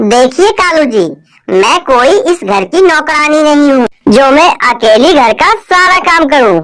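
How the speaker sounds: very loud, arrogant, haughty outburst. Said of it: "[name] को घर से जाते ही [name] कौवी बोलती है, / [name] को घर से जाते ही [name] कौवी बोलती है, / माँ, आज से ये तेरी बहू है".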